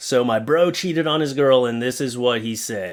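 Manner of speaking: ordinary talk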